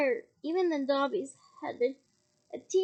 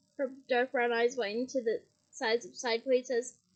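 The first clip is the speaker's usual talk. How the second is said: plain reading voice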